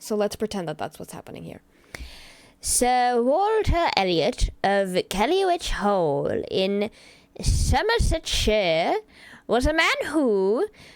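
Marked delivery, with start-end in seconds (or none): 2.6-10.7 clumsy fake English accent, very slow. Opening a stream by reading a book passage aloud in a bad English accent. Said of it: "reading this in a bad English accent".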